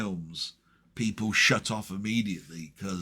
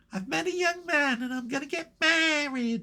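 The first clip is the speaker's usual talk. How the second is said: put-on tiny, very high little-girl voice. Retelling a story, quoting a grown woman in a little childlike voice. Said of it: "this little childlike voice ... like this".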